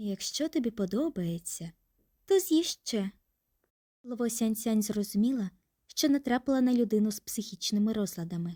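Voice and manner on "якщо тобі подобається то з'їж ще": tender, gently reproachful. He holds a peeled mandarin piece to her lips, reproachful and tender. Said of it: "Він сказав докірливим, ніжним голосом".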